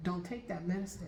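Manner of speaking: ordinary talk, nothing marked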